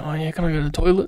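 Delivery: imitated whispering. Retelling how an apprentice asks the other boys about the toilet: imitating someone whispering. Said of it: "whisper in their ear".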